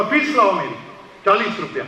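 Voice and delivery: ordinary talk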